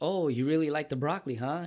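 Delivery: mock excited, bright and delighted. Retelling what a woman asked while the speaker ate her broccoli: mock-excited. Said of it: "she was all excited, like face beaming".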